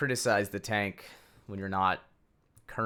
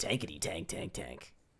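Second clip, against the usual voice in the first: low, booming movie trailer announcer voice. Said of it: "Get that movie guy voice going".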